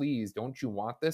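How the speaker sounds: mock, acted-out pleading tone. Describing a character who keeps calling out to people, imitating someone pleading. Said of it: "being like pleading".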